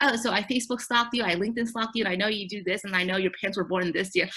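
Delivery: ordinary talk, nothing marked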